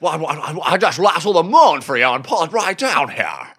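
stumbling stutter on "I", film-star style delivery. Telling the co-host he'd lasso the moon: Jimmy Stewart impression. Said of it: "the best Jimmy Stewart impression".

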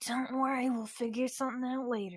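discreet, hushed half-whisper off to the side. Voicing a character discreetly reassuring another character: discreet half-whisper. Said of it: "discreetly, like, whisper".

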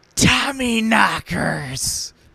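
dramatic cry, drawn out slowly and shouted.

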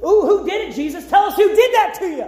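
scornful, mocking, jeering taunt. Retelling how the captors taunted the blindfolded man, retelling a mocking taunt. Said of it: "They mocked him".

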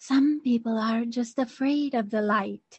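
put-on hushed old-lady half-whisper, every word carefully enunciated. Retelling a quiet movie scene, imitating an old lady half-whispering.

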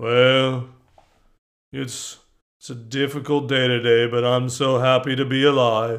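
low cartoon donkey voice. Telling the group nobody sounds thankful, then doing an Eeyore voice. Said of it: "like Eeyore".

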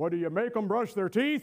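put-on gruff Yankee voice. Quoting Ed Ledford's answer to an excuse, imitating Ed Ledford's gruff Yankee voice. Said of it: "big, gruff, rough Yankee voice".

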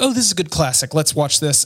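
ordinary delivery

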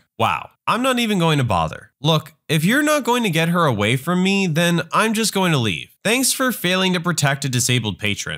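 ordinary delivery

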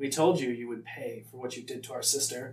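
cackling character voice. Narrating a game scene, voicing the figure the party hears, cackling voice. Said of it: "you hear a familiar cackling".

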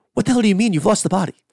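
fast, loud, rapid-fire rattled-off delivery. Quoting a man answering his goons, speaker says the line really quickly. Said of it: "He just says it really quickly".

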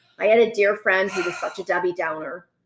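normal talking voice

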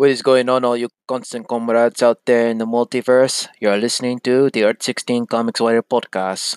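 badly faked, terrible put-on Russian accent. Podcast host greeting listeners at the show's opening, in a terrible Russian accent. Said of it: "Pardon my terrible Russian accent".

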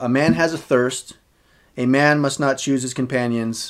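normal talking voice

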